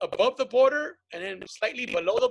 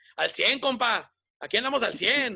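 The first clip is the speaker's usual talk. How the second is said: mafioso-style gangster voice. Imitating a brother back from the ranch in Sinaloa: imitating mafioso talk. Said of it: "comes back all fucking amafiado".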